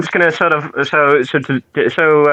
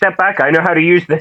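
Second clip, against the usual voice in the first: wary, defensive, threatening tone; 3 semitones higher than usual. Voicing a dwarf holding up a mandolin like a sword: in-character defensive warning. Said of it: "I'll be like".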